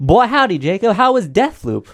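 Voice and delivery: very loud, booming, very high, slow, drawn-out holler. Asking another speaker how his game was: Foghorn Leghorn voice. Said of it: "I turned into Foghorn Leghorn".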